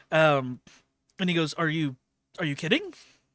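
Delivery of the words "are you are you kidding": stunned, bewildered, baffled, can't-believe-it tone. Game master voicing a half-orc merchant answering a player's question, bewildered.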